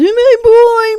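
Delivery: very high shrill scream. Retelling a scene where she sees Tyler in the mirror, imitating a scream. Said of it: "she screams".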